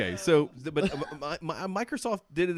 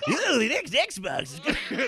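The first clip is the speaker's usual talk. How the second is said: bad put-on old hermit voice, higher; 8 semitones higher, 3 dB louder than usual. Mocking a game trailer speaker: terrible Master Roshi voice. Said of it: "that's a terrible Roshi".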